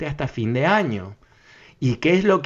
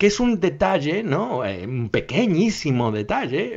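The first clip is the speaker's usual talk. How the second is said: tongue-in-cheek, ironic, sarcastic understated tone; 3 semitones higher than usual. A commentator discussing Fauci's remarks, ironic tone. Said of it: "estoy siendo irónico".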